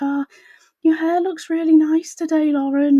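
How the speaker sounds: very high, condescending, mocking baby talk. Retelling schoolmates talking down to the speaker, in a mocking baby voice. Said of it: "they would like put on the baby voice".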